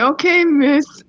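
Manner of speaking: dripping with sarcasm, very sarcastic. Retelling own reply to a demanding woman: imitating a sarcastic reply. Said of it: "Very sarcastically".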